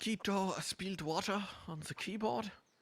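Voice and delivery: very high-pitched, exaggerated put-on German accent. Showing an impression, reading out a chat message: put-on german accent. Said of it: "That's my big impression".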